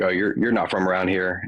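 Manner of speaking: ordinary talk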